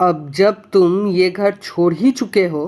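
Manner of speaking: ordinary delivery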